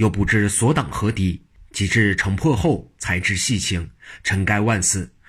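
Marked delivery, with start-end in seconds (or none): none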